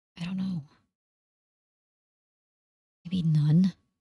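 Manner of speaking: hushed whisper. Asked how many bullets are left, with a large man nearby, whispering. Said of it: "Dave whispered".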